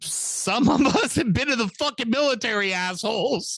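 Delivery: very high, shrieking scream. Retelling a friend's reaction to people shooting off fireworks: imitating a friend screaming. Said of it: "he was screaming like".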